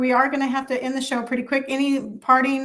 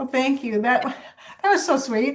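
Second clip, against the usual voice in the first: teary, emotional, choking up, near tears. Thanking Cynthia for her message on the show, choking up and teary. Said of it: "I'm not going to cry".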